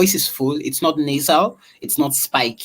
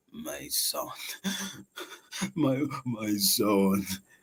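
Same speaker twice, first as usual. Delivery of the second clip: put-on aged old man voice, low and soft; 5 semitones lower, 12 dB quieter than usual. Showing how you can change your voice to sound different, in an old man voice. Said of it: "I can try to sound like an old man".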